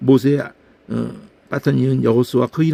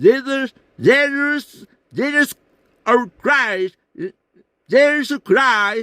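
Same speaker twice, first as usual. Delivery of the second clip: English accent with strained vowels; 11 semitones higher than usual. Showing how english speakers say 'jesus': english accent, strained vowels. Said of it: "영어 제주스 하는데 ... 모음이 힘을 빡빡 들어가면서 이상한 소리로 이게 들려요".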